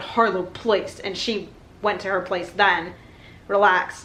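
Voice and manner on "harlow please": ordinary talk, nothing marked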